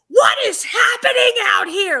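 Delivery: acted very loud, very high, shrill, raging furious scream. Retelling the director yelling at movers outside: imitating a director in a rage. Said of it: "complete rage".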